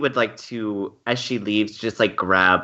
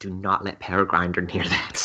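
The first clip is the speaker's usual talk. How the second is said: fully half-whispered, in-character voice; 4 dB quieter than usual. Voicing a character warning another about the golem: half-whispering in character. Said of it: "Grady whispers to Agreus".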